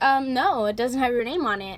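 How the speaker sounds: put-on sassy attitude. Retelling what a girl in her seat said: imitating a sassy reply. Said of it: "a little sassy attitude".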